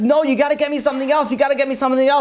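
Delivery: acted, high, rushed, insistent, pleading screaming. Telling a story of a man whose good deeds fell just short, retelling a scream. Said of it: "And he was screaming".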